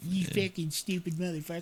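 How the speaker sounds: furious, angry, pissed-off cursing. Retelling what angry players said after being tricked: imitating angry players. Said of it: "they'd be all pissed off".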